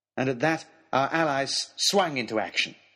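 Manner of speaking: usual speaking voice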